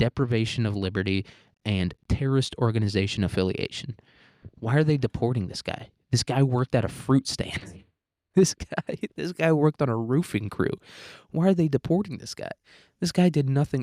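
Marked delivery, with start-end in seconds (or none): 4.6-13.8 snarky, sarcastic put-on caricature voice. Mocking liberals' objection to a deportation in a mock liberal voice. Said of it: "That's what I would say if I was a lib".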